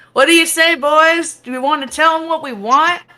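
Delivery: very high, loud yell. Voicing a woman who calls back to the men behind her: yelling out. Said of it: "she yells out".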